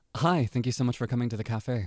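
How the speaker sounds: scripted, mechanical, robotic customer-service voice. Acting out a barista greeting a customer: customer service-y robotic voice. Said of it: "me trying to sound like".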